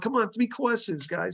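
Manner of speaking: put-on coaxing New York accent. Remembering Monty calling the band, doing Monty's New York accent. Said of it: "in his New York accent".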